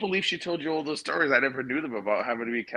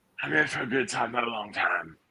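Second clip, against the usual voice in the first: badly butchered, mangled British accent. Asked to do Death first, the speaker quotes the line; Death in butchered British accent. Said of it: "butcher the British accent".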